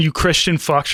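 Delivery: ordinary talk, nothing marked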